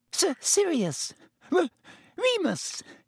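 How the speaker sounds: very high, nervous, squeaky little voice. Reading a novel aloud, voicing a man greeting old friends, in a squeaky voice. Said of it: "Even Pettigrew's voice was squeaky".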